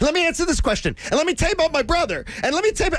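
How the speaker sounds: very high, jittery, nervous, overexcited rambling babble. Speaker mimics the Eagles coach answering questions: imitating nervous, overexcited rambling. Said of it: "he's so excited like this".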